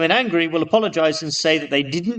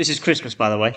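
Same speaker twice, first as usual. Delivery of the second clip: plain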